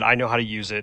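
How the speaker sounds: ordinary delivery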